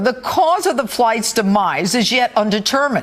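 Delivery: ordinary talk, nothing marked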